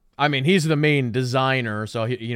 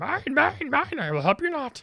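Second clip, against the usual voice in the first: happy, very high and swooping, bright and bouncy; 4 dB quieter than usual. Showing another degree of the Yoda voice: happy Yoda voice. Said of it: "more like happy Yoda".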